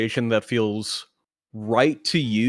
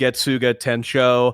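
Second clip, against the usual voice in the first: ordinary talk, nothing marked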